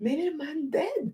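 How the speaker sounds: sweet, vibrant, innocent, high, soft voice. Retelling what a cousin said, imitating cousin Effie's sweet voice. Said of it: "In her sweet".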